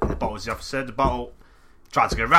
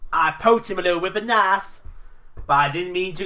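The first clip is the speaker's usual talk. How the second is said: put-on Southern accent, pitched up; 7 semitones higher than usual. Reading a line aloud, put-on redneck accent. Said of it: "What's a, a Florida accent?".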